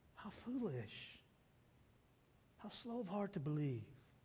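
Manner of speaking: very soft, hushed, gentle, soothing and reassuring tone. Imagining how a line might have been said: soothing, reassuring tone. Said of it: "Or was it soothing and reassuring? I think the latter".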